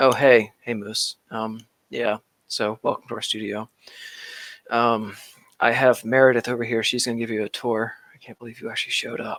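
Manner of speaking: mock grudging, offhand, reluctant, uninterested tone. Retelling how the same person greeted the speaker in person: imitating a community manager's in-person reluctance. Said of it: "And in person, he, he was".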